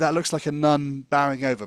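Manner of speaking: ordinary delivery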